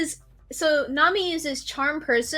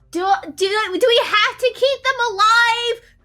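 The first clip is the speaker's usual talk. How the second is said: loud shout, pitched higher; 7 semitones higher, 5 dB louder than usual. Calling out in character to Oliver during a fight: yelling. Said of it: "I'm gonna yell back to Oliver".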